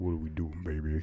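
put-on deep seductive voice. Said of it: "seduce someone ... talking with a really deep voice".

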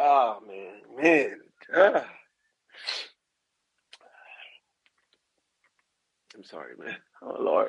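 tearful voice. Overcome while giving a testimony, apologizing to the listeners, crying. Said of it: "I'm about to share the tear".

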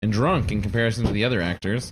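ordinary delivery

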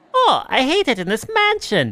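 very high, swooping, sing-song cartoon voice with Italian lilt. Speaker asked how Luigi differs from Mario, answering in a Luigi voice. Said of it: "Luigi is like".

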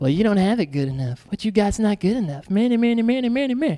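quick, rattled-off tempting serpent voice. Speaking about temptation, acting out the voice of the serpent. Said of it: "That's the voice of the serpent".

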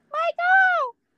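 slow, swooping, stretched-out sing-song delivery. Reacting to a record news item, delivery copied from The Longest Yard. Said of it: "why'd you say it like that?".

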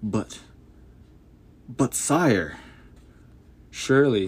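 stammering halting start, stuttered words breaking off. Narrator reads a general on his knees before the monarch, stuttering. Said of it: "he stuttered".

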